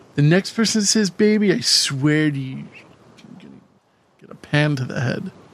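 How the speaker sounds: usual speaking voice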